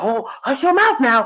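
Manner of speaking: firm, dismissive voice like a stern elder. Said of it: "They're like".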